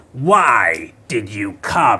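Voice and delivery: loud, swooping undead voice, "why" stretched out. In a role-play scene, speak in the voice of the Lich. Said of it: "he's using the voice of the Lich".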